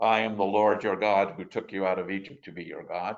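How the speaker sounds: deep, low proclaiming voice. A speaker explaining a Hebrew verse quotes God, in a deep God voice. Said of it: "The God typically speaks in a deep voice".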